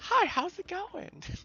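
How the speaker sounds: put-on squeaky voice of a big orc. A player voices the friendliest-looking orc guard greeting the group, squeaky orc voice. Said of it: "He has a squeaky voice too".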